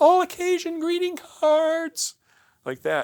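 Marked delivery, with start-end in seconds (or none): 0.0-2.1 put-on very high, very loud tiny child voice. Retelling ringing a doorbell to sell greeting cards as a boy, in a tiny seven-year-old voice. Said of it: "in my tiny little seven-year-old voice".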